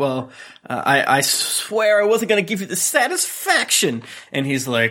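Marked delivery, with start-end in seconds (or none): 0.0-4.0 mock crying, high, swooping, tearful sob. Retelling a scene where she speaks as she's crying: mock crying. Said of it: "and as she's crying".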